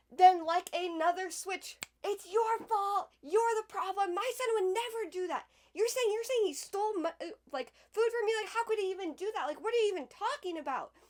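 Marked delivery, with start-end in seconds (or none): 2.0-10.9 acted, furious, high screaming tirade. Retelling how a parent switched to blaming them, imitating someone screaming. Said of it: "switching back and forth from screaming at you".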